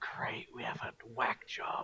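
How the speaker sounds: very quiet whispered aside under the breath. Voicing a character who turns his head aside: whispering in character. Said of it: "just whisper".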